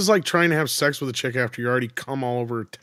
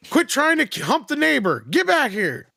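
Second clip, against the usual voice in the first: mock, very high scolding shout; 13 semitones higher than usual. Retelling what others overheard on an open mic: imitating someone yelling. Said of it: "you were out yelling and screaming".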